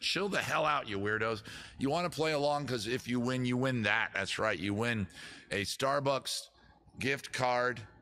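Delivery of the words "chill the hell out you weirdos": plain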